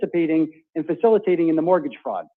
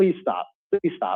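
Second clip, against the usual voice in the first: crying, begging, tearful voice; 4 dB quieter than usual. Retelling a phone call where the speaker begged while crying: retelling a tearful plea. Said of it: "crying like a child, begging her".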